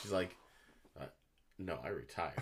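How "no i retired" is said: muttered under breath, much lower and quieter. Retelling a nurse on a game show answering the host, under her breath. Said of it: "she under her breath".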